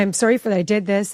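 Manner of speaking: normal talking voice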